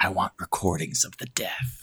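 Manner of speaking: mock sexy voice. Podcast co-host joking about a hypothetical movie, in a put-on sex voice. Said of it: "how I use my sex voice a lot".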